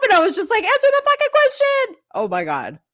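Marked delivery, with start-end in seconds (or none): 0.6-2.0 very high shriek, acted out, screaming. Retelling watching the trial on TV, imitating own screaming. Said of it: "I was screaming at the T V".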